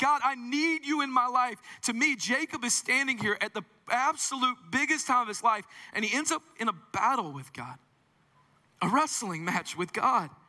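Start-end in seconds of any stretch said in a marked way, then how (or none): 0.0-1.6 desperate, impatient, high-pitched pleading outcry. Showing how he waits on God: yelling at God, acted out. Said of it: "And I'm yelling".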